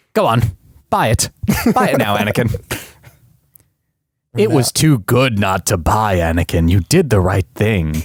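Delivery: raspy, scheming, sinister voice. Urging the other speaker to buy a video game, in a Chancellor Palpatine impression. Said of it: "some Chancellor Palpatine".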